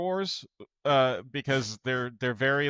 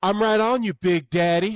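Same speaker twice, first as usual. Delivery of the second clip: loud, high, weird, strange raised tone; 7 semitones higher, 6 dB louder than usual. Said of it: "in a weirder tone with [name]'s voice".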